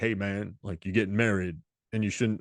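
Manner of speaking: put-on Southern gentleman voice. Quoting the character Luther from a movie: Ving Rhames voice. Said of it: "talking like Ving Rhames".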